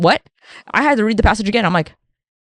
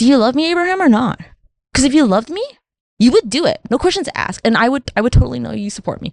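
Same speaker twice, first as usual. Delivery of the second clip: put-on sassy, clingy, insecure girlfriend voice; 3 semitones higher than usual. Imagining how a Bible editor wrote God talking to Abraham: God as insecure girlfriend. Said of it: "I'm gonna write you like a girlfriend who's super insecure".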